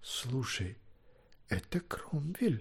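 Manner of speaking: sudden exclamation in a barely audible whisper. Gwydion suddenly nudges someone in the side: whispered exclamation. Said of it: "шепотом вдруг воскликнул Гвидион".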